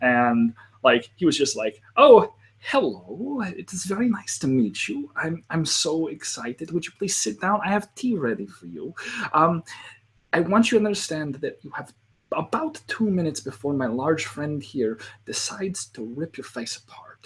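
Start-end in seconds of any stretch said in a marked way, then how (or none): 2.0-17.3 put-on German accent. Game master retelling his players meeting Wilhelm in a hut, Wilhelm's German accent. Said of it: "one of my favorite German characters".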